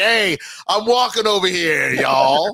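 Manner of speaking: clumsy, drawn-out fake American accent. Mocking someone trying to do an American accent: bad put-on American accent. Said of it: "someone trying to do an American accent".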